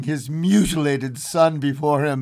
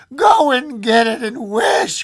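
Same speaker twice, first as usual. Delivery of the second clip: high, loud, quivering, excited cry; 9 semitones higher, 5 dB louder than usual. The old woman answers her husband, who calls it a coincidence: cried, quivering with excitement. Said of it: "cried his wife, quivering with excitement".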